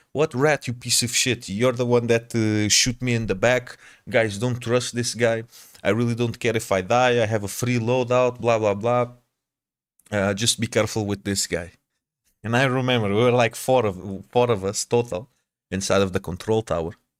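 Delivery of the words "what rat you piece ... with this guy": ordinary delivery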